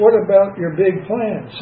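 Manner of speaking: usual speaking voice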